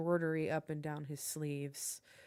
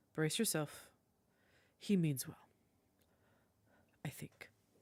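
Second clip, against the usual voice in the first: muttered quietly under the breath. A game master voices a character speaking to the players before leaving, under his breath. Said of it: "He kind of says under his breath".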